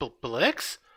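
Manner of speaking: taken aback, startled surprised gasp. Voicing a character who sees Blix and is taken aback: taken aback, surprised gasp.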